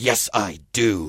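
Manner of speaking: crisp, clear delivery, pitched very low. Retelling how she answered the priest at a baptism: crisp, clear voice. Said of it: "with this crisp, clear voice".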